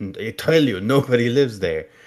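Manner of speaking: put-on Transylvanian accent. Retelling a scene between him and her, in a Transylvanian accent. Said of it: "that's a very good Transylvanian accent".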